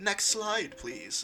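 prim and proper, very high-pitched voice. Retelling a streamer's detective character giving a slideshow: imitating a prim, proper voice. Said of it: "Like all prim and proper".

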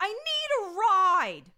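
very high, loud, shrill, drawn-out whiny yell. Retelling a teenage girl on a payphone, imitating a whiny yell. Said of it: "She's whine yelling into the phone".

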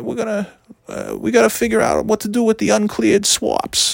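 put-on soft-spoken, high-pitched North Shore Boston accent. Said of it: "so he talked like this".

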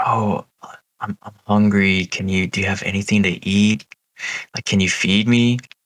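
put-on mumbling, pleading old-woman voice like a hungry witch. Retelling what an old lady in a shack said: imitating a mumbling old lady. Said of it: "she was, like, mumbling something to him".

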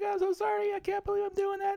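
squeaky, very high-pitched talking voice. Describing a tough-guy actor talking to himself: high-pitched Tom Hardy impression. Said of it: "talking really high pitched".

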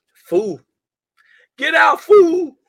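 shrill, very high, full-volume yell. Talking about The People Under the Stairs, quoting a character: Roach impression. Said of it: "That's a great impression".

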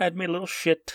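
half-hearted fake Irish accent. Joking about a photo of a fallen meteor, in a not-quite irish accent. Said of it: "That wasn't even really an Irish voice".

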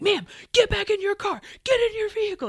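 shrill, barked, very high, loud yelling. Retelling how a man who pulled into her driveway ordered her, retelling a yell. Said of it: "He's like yelling".

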